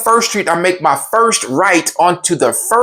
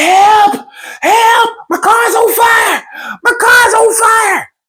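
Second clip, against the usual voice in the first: put-on, very high, desperate, stretched-out, panicked shouting; 3 dB louder than usual. Retelling calling for help as the car burned: imitating own panicked yelling. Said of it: "can hear me yelling".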